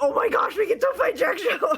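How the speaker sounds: thrilled, hyped-up, excited gush. Correcting how others heard their reaction, retelling their own hyped excitement. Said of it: "I was so hype about it".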